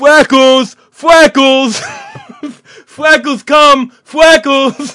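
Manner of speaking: put-on child calling out, very loud and very slow. Retelling what he heard a kid shout: impression of a kid calling out. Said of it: "I'm doing a perfect impression of the kid".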